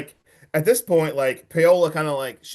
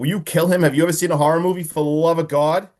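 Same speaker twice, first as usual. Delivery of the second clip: ordinary talk, nothing marked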